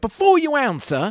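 shrill, very high-pitched, ranting shouted yell. Retelling an angry rant aimed at the speaker: imitating someone yelling. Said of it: "And he's yelling at me".

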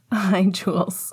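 ordinary delivery

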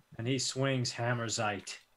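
plain

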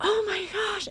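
put-on over-the-top excitement. Retelling a praying partner's reaction to talk of a calling: imitating someone over-the-top excited. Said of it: "she got super over the top excited".

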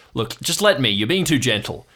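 much harsher voice. Narrating a scene, voicing a second person waking the listener's character, much harsher voice. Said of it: "another voice, much, much harsher".

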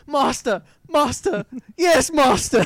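exaggerated, very high, loud, drawn-out voice. Recalling the Renfield from Dracula: Dead and Loving It, imitating Renfield. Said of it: "the one from Dracula Dead and Loving It".

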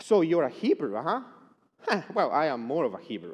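loud, thickly sarcastic tone. Voicing Paul's reply about being a Hebrew, in Paul's mock-sarcastic voice. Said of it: "I can hear Paul's sarcastic voice".

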